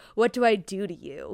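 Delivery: low, slow, threatening, looming menacing tone. Retelling a scene where Anthony speaks to Kate: imitating Anthony's menacing tone. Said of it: "in a menacing tone".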